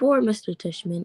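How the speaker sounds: ordinary delivery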